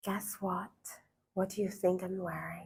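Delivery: whisper-soft, very quiet, intimate bedroom voice. Showing women how to talk to a partner who is not around, soft bedroom voice. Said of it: "You can see how soft my voice is".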